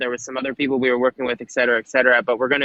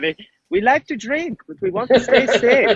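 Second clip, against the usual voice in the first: fake put-on German accent, pitched way up; 10 semitones higher than usual. Hosts joke about Germans at a company helping with their design: mock German accent. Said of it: "I don't even know if that's a German accent".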